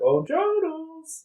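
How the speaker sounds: very high, slow, squeaky voice. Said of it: "you should have done in the Mickey voice".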